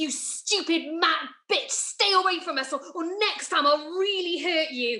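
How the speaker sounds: put-on shout. Retelling a threat a woman shouted after a push: imitating her shouting. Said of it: "she shouted".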